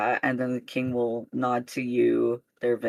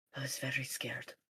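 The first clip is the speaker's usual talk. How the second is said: very soft, barely audible whisper; 15 dB quieter than usual. Stunned, he hugs the listener deeply and speaks in a very soft whisper. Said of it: "he whispers very softly to you".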